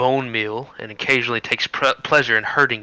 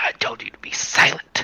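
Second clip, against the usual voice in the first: whispered, seething rage, breathy and furious. Storyteller voices Morgatha, who glares at you, Morgatha in an angry rage. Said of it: "she looks at you in a in a angry rage and she says".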